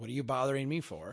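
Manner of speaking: put-on annoyed, irritated man voice. Retelling how a guy at a rental booth answered: imitating an annoyed man. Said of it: "he was kinda ticked off".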